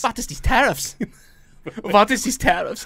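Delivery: exaggerated German accent. Acting out Merkel reacting to the tariffs: Merkel impression, German accent.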